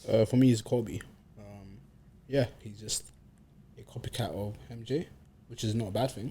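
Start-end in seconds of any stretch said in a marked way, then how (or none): 2.6-6.3 dropped to a very quiet near whisper. Ranking basketball players and comparing one to another, getting quiet. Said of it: "he starts whispering?".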